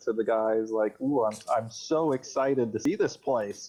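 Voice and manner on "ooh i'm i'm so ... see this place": kind of sarcastic, put-on excitement. Speaking in character to the other players: sarcastic in character. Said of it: "I say kinda sarcastically".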